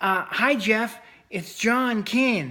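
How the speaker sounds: small, squeaky, high little voice. Retelling John calling Jeff on the phone, in John Keane's squeaky little voice. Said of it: "he had this kind of little squeaky little voice".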